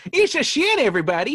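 put-on old-timey proclaiming, high and loud. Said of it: "that old-timey voice".

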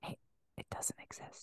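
mock whispering. Making a point about faith, whispering like Joe Biden. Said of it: "I'm like Joe Biden when he wants to make a point. He whispers".

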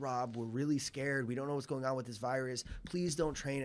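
put-on pleading voice. Retelling a phone call from mom about the virus: imitating mom pleading. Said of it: "she was, like, pleading with me".

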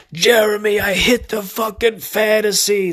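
mock very high, loud, drawn-out scream. Retelling someone running out and screaming the news: imitating Fiore screaming. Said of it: "screaming it".

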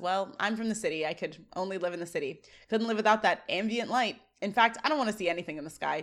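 normal talking voice

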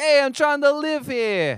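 terrible fake New York accent, slow. Acting out someone's reaction while joking with another speaker, in a terrible put-on accent. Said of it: "It's a terrible accent".

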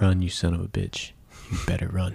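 really low steady voice. Imitating how a movie character talks throughout the film: really low voice. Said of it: "everything he says in a really low voice, just like this".

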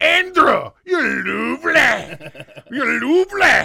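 high, loud, manly yelled grandma voice.

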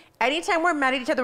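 normal talking voice

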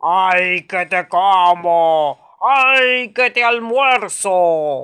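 very loud, monstrous ogre roar. Narrating a tale, a voice inside a spider-draped house calls out; ogre voice. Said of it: "una voz de ogro que decía".

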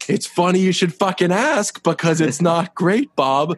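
mock exasperated tone. Retelling how a character answers a greeting: imitating an exasperated reply. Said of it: "more exasperated".

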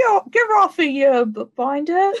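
loud, high, jeering street urchin voice. Demonstrating a made-up insult in conversation, in a street urchin voice. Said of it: "It's kind of like a street urchin insult".

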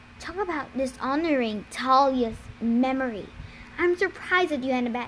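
ordinary delivery, nothing marked

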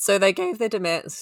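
voice cracking. Telling a story to the others, voice cracking. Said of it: "my voice just went real".

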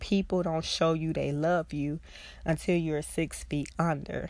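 ordinary talk, nothing marked

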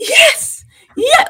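very high-pitched, mock thrilled, excited yelp. A WWE fan recalls a reaction, retelling an excited yelp. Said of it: "I was so excited".

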